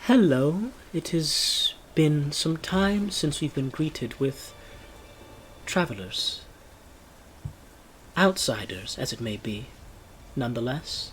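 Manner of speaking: barely audible, faint, breathy whisper. Storyteller voicing a figure who greets the travelers, in a very faint voice. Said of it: "you hear this very faint voice".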